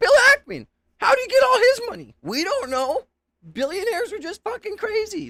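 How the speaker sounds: crazy voice, very high pitch swooping wildly. Describing how Tucker Carlson talked on stage, in a Tucker Carlson crazy voice. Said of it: "in his crazy voice".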